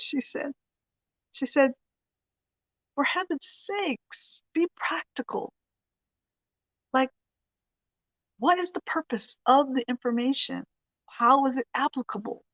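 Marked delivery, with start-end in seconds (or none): 2.9-12.4 put-on woman's voice with an English accent. Retelling what a woman said to a man over tea at their house, English accent. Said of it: "she said in her English accent".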